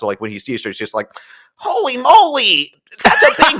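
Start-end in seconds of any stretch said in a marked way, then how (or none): 1.6-3.6 exaggerated comic nerdy voice, higher and louder. Retelling a comic relief character's line in a film: exaggerated comic relief voice. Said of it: "a very exaggerated voice".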